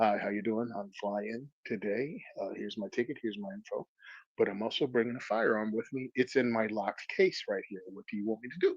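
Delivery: very quiet, hushed, low-key voice. Retelling telling the airline lady about bringing a firearm: quiet voice. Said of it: "quiet voice".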